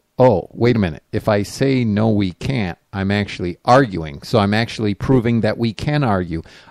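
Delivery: ordinary talk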